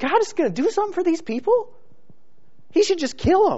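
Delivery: whispered, hushed scorn and disgust. The speaker acts out how we would judge others, imitating a disgusted judgment. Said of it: "we would look on with disgust and say".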